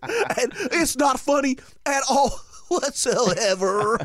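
very high, loud, slow, drawn-out southern drawl. Retelling what the coach said over his mic: imitating Coach Esslinger's southern accent. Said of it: "He had a southern accent".

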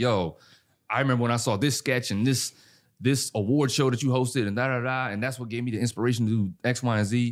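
ordinary delivery

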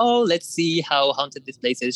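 mock dry, disbelieving, doubting sarcasm. Telling a story, the speaker imitates their mom being sarcastic. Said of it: "she was like you know being sarcastic".

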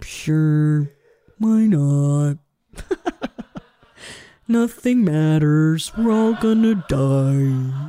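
mopey donkey character voice. Imitating a friend who is like Eeyore: put-on Eeyore voice. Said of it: "Existential Eeyore".

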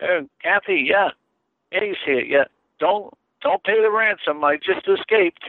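high, joking voice with phone-like quality.

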